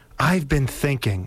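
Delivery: ordinary delivery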